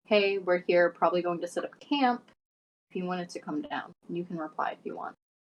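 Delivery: offhand, casual murmur to oneself. Sending a spell message to a tabaxi friend, murmuring under breath. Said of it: "just murmuring under my breath".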